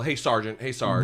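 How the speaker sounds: ordinary delivery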